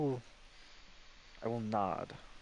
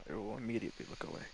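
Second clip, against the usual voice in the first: ordinary talk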